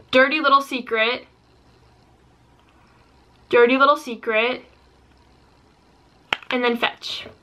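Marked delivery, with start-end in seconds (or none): none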